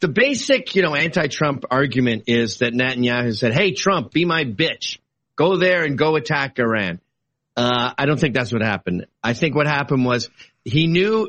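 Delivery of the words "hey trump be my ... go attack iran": normal talking voice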